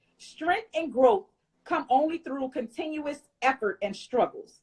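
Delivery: ordinary delivery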